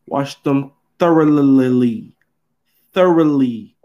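pointed, emphatic, serious, every word stressed. Speaker repeats an instruction and tells listeners to read their lips, emphatic, pointed tone. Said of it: "Listen to my tone".

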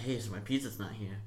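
ordinary talk

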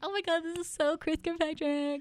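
high, starstruck gushing fan voice.

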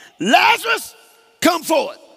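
loud, very high-pitched shout. Acting out a scripture scene, calling the dead man out: imitating Jesus speaking loudly. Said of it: "They said with a loud voice".

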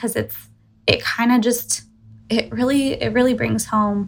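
emotional voice, catching with feeling.

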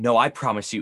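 put-on forceful, insistent delivery. Describing a character growing darker, imitating a forceful line. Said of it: "it's very forceful".

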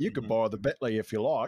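put-on Australian accent. Quoting Alfred's line, trying Michael Caine: Steve Irwin-like Australian accent. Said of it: "That was a spot on Steve Irwin".

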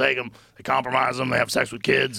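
imitated scraggly voice. Imitating a longtime acquaintance: impression of his scraggly voice. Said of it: "Your fucking impression is so good".

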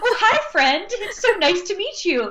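very high, gushing sweet-talk pet voice. Retelling how plants get greeted, imitating talking to a pet. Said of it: "I talk to plants like I talk to my dogs".

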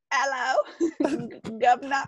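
attempted British accent. Asked to do a british accent, the speaker tries one.

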